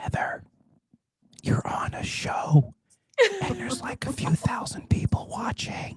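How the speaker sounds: hushed, slow, breathy, drawn-out whisper. Telling Heather a secret on a show, in a Joe Biden whisper. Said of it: "I'm gonna do it in a Joe Biden whisper".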